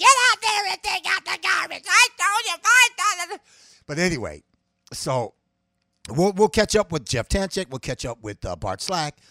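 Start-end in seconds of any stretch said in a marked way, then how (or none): 0.0-1.8 put-on nagging woman voice. Picturing Hillary as the classic wife from hell: Hillary as nagging wife voice. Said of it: "she's the classic wife from hell, you know, voice".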